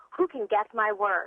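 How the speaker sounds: ordinary talk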